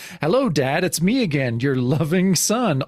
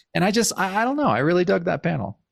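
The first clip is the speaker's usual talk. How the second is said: usual speaking voice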